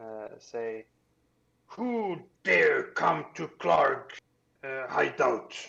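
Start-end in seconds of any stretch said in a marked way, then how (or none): 1.7-5.5 booming, loud, slow delivery. Voicing a hidden creature speaking broken Common to the adventurers: speaking broken Common. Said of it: "in broken common".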